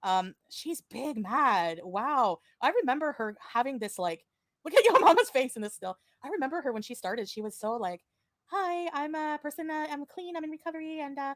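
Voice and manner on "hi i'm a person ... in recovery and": high, little, sweet, innocent-sounding voice. Recalling how a woman sounded when she started, imitating her sweet innocent voice. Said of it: "her little sweet innocent voice".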